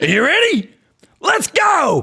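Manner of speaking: shrill, very loud, high, drawn-out hype yell. Testing a microphone limiter, yelling a catchphrase as [name]. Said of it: "that's me yelling".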